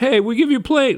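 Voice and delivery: high, put-on Italian-sounding accent. Acting out Qatar offering a plane, Italian-sounding accent. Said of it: "I don't know why I made it sound like he's Italian".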